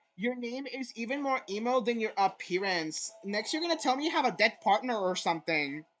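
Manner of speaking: plain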